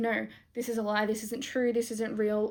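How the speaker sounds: normal talking voice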